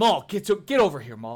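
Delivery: slightly rowdy and upset. Voicing a group of kobolds at a table calling maul over: a little rowdy and upset. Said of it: "they start to get a little rowdy".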